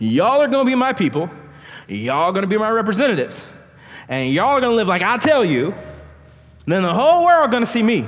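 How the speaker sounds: put-on Southern American accent. Preaching to a church, acting out a quoted speech, Southern dialect. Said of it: "I'm a Southern dialect".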